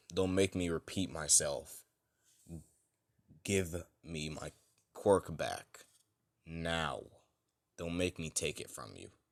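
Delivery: stern, firm, unyielding tone. Retelling a fan story where All Might demands his quirk back: stern All Might voice. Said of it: "All Might just looks at him with a stern look".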